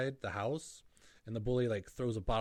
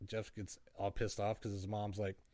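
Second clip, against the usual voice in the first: usual speaking voice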